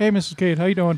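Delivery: put-on high, earnest, nerdy young-teen voice. Imitating a friend checking in on his wife: imitating Jay Whitaker, nerdy. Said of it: "'cause I made him sound really nerdy".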